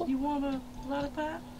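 put-on creepy old man voice. Told he sounds like the old man from Family Guy, he keeps it going; Herbert impression. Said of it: "Is he called Herbert the Pervert?".

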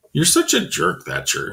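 high, contemptuous, scornful sneering tone. Throwing down the stick, he speaks to the other boy, sneering. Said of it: "he sneered".

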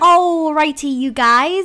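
booming pirate-style voice. Starting the first holiday craft for viewers, sounding like a pirate. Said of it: "why did I just sound like a pirate?".

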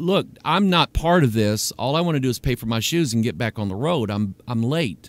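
calm, very low and soft, level-headed. Speaker retells answering a man yelling at a girl, acting out speaking calmly. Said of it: "And I just said calmly".

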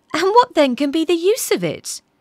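high, cried-out exclamation. Narrating a young man's reply to the physician, crying out. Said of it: "cried the young man".

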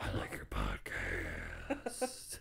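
creepy, hushed whispered voice. Telling listeners how to send a voicemail, the speaker demonstrates a creepy voice. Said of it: "You can be creepy".

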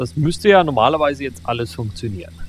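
stress on normalerweise. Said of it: "Betonung liegt auf normalerweise".

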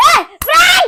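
loud, high-pitched, gleeful voice.

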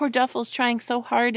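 ordinary delivery

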